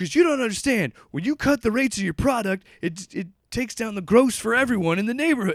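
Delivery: very high, shrill screaming. Retelling a nuke dealer arguing economics with three others, retelling angry screaming. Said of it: "like screaming at each other about economics".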